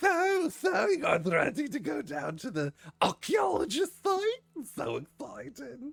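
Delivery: very high character voice swooping around. Voicing the chef and maitre d' Zorth greeting the players: voicing Zorth the chef. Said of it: "He goes".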